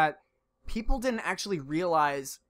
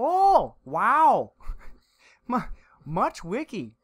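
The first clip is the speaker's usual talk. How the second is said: put-on Canadian accent, much higher and louder; 6 semitones higher, 6 dB louder than usual. Host explaining how they imagine the Doge pictures sound: Doge in a friendly Canadian accent. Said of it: "like a really friendly Canadian".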